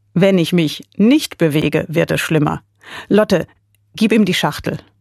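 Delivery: plain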